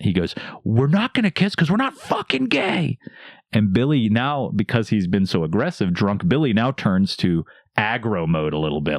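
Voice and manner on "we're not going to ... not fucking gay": very high-pitched, angry screaming yell. Retelling how a man at a bar answered: imitating a man yelling. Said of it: "he screams, he yells".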